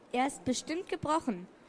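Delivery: plain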